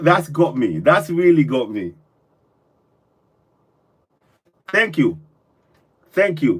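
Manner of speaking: emotional, on the verge of crying. Moved by someone's words and thanking them, emotional, near tears. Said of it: "Don't start crying".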